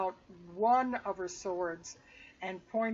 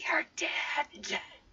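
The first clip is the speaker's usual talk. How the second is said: hissed, threatening whisper; 8 semitones higher than usual. Voicing a character threatening enemies without alerting the others, hissing. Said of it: "she just like hisses at them and goes".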